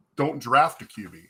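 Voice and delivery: ordinary talk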